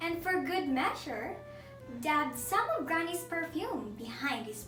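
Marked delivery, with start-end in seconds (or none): none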